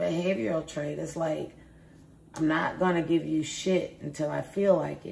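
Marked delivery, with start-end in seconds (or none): none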